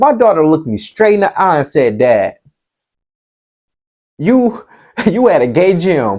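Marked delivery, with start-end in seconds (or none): 2.0-6.2 mock speech broken up by giggles, cracking up. Retelling what the daughter said through her laughter: imitating daughter laughing while talking. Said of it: "She just cracking up".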